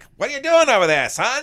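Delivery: very high, very loud transatlantic accent. Explaining the invented Mid-Atlantic accent, then demonstrating it: Mid-Atlantic accent. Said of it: "came up with this Mid-Atlantic accent, which sounds like".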